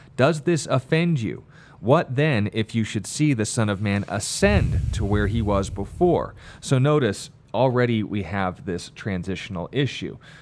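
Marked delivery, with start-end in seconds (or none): none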